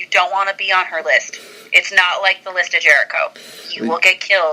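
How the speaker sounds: ordinary delivery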